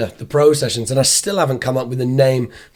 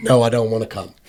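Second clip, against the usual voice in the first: imitated arrogant, haughty tone; 3 semitones lower than usual. Retelling how the other speaker turned down an invite: imitating an arrogant refusal.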